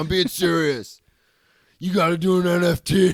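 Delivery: drawn out, big and loud delivery. Retelling what a friend said on a call: imitating Farzad. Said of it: "that was a pretty good Farzad".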